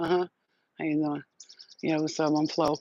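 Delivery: put-on, acted, minimal-effort delivery. Acting out going on a show and doing the least: acting out doing the least. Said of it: "I'm gonna do the least, the least".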